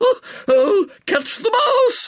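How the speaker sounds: shrieking, very high-pitched and drawn out. Reading a woman's line to a man at the grand piano, screaming. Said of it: "screamed Miss Felicia Courtenay".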